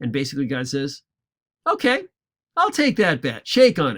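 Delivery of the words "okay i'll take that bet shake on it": mock very high, swooping, sarcastically casual voice. Retelling Satan's reply to God, being sarcastic to make it funny. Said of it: "I'll be a little bit sarcastic with this to make it funny".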